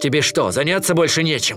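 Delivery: annoyed, exasperated, irritated tone. Narrator voicing Kinai, caught in a trap, answering the bear cub: irritated. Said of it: "раздраженно заметил Кинай".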